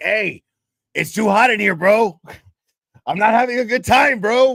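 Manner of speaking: imitated raspy drunken voice. Retelling what a drunk friend said at a party: imitating a friend's raspy drunk voice. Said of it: "his voice would get really raspy".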